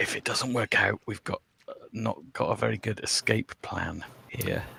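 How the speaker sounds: very quiet, barely audible whisper. A player's character whispers back to Voronar: whispering. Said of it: "I whisper back to Voronar".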